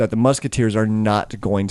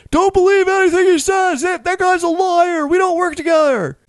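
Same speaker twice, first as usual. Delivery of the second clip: very high-pitched, protesting yelling; 4 dB louder than usual. Game narrator voices Rusty, back in the brig, calling out: Rusty yelling. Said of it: "you can hear him yelling".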